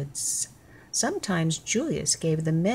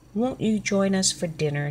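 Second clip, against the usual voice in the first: usual speaking voice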